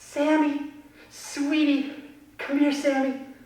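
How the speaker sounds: sweet, pleased, high, slow calling voice. Demonstrating how parents call a child they're happy with: happy parent calling sweetly. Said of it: "mom and dad are very happy with you".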